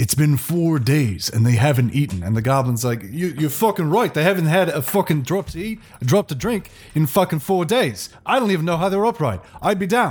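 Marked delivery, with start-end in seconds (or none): 3.0-10.1 clumsy, badly faked Cockney accent. Voicing a goblin in character, self-admitted bad Cockney accent. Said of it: "I'm not good at Cockney".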